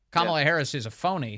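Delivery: ordinary talk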